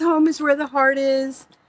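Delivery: ordinary delivery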